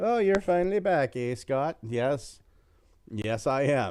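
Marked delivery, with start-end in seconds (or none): 0.0-1.8 put-on mixed Polish and Norwegian accent, pitched up. Acting out someone greeting Scott on his return, in a mixed Polish-Norwegian accent. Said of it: "an amalgamation of a Polish accent and a Norwegian accent".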